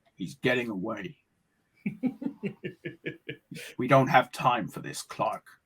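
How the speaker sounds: deep, low, hushed heroic voice. Show the Batman voice you should have tried, addressing Clark, in a Kevin Conroy Batman voice. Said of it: "should have just been trying to do Kevin Conroy".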